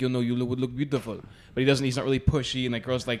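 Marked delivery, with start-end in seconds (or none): 0.0-1.2 put-on Italian accent, laid on thick. Quoting a flirty italian spa worker: imitating an italian accent. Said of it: "With an accent, and he's like".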